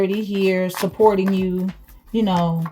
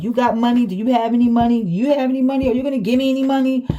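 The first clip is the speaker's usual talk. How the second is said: acted-out needy, pestering, repeated begging; 4 semitones higher than usual. Reading cards, acting out someone asking for money: imitating someone begging. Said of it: "Somebody could be, like, begging".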